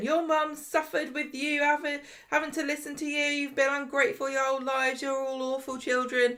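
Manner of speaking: put-on, high-pitched, berating shout. Recounting Jessie shouting at the Platt kids, imitating Jessie shouting. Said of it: "was shouting at the Platt kids".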